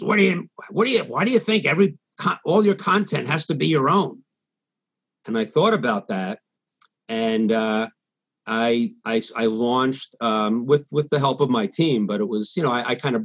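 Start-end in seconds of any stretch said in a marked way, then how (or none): 0.0-4.2 gruff, blunt, pitched-up, questioning tone. Retelling a question Gordon asked one day: imitating Gordon's gruff voice. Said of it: "he had this gruff voice".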